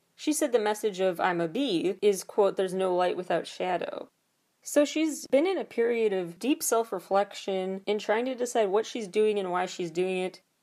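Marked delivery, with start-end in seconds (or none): none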